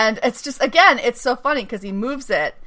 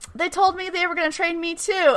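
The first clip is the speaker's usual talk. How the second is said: acted excited, high, fast, words tumbling out; 8 semitones higher, 3 dB quieter than usual. Retelling a story, acting out a man telling Meredith his news, imitating him all excited. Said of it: "he's all excited".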